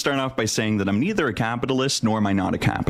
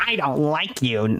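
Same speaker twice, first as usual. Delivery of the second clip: mocking nasal vocal-fry voice, higher pitch; 4 semitones higher than usual. Retelling how a man confronted the speaker: imitating a nasal vocal-fry voice. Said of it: "this pipsqueak had some funny sounding voice".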